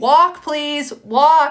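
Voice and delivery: stern, not mean. Showing camp staff how to tell running campers to walk, stern but not mean. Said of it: "You need to say in a stern voice, but not mean".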